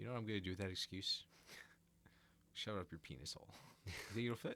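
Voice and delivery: put-on bone-dry, straight, dead-level deadpan delivery. Retelling a movie character's line, imitating a deadpan delivery. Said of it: "how he says it with a straight face".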